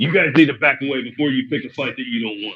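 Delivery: quiet, intimidating, threatening, menacing voice. A player's character steps up to the sailors on the dock: intimidating threat. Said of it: "I will use intimidation".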